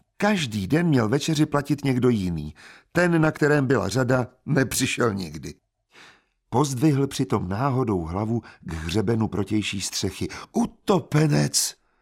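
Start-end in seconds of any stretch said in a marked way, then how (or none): 10.5-11.7 exclaiming in fake, feigned horror. A man looks up at the opposite rooftop and cries out, exclaiming in mock horror. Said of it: "Zvolal jakoby zděšen".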